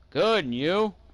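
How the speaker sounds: mock drunk voice. Retelling how a drunk cousin answered a woman who yelled, imitating drunk speech. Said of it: "drunk out of his mind".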